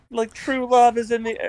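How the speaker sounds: put-on high, overdone British accent. Recapping a wrestling wedding segment, quoting Beth Phoenix with a British accent. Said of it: "I don't know why I gave her a British accent".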